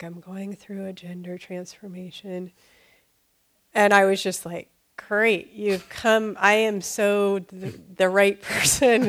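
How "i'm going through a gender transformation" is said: very quiet, soft, gentle, hushed murmur. Retelling what a man said through a door opened a crack, really soft voice. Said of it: "in a really soft voice".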